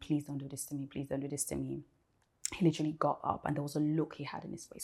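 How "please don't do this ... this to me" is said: put-on tearful, weeping pleading, quieter. Retelling weeping on the knees before him: retelling own weeping plea. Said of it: "while I was weeping and begging and saying".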